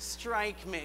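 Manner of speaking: put-on soft, nasal child voice.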